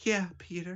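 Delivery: put-on whispery tearful voice. Mocking an actress's line delivery: Kirsten Dunst whisper cry-speaking. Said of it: "whisper voice of".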